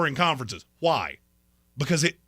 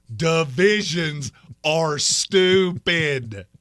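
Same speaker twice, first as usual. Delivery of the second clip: very slow, deliberate, spaced out word by word. Telling someone to look at him, then saying it real slow. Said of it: "Let me say this real slow".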